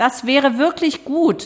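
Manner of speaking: reproachful, high-pitched, slow reproving tone. Loretta remarks to the others, her voice reproachful. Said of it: "Lorettas Stimme klang vorwurfsvoll".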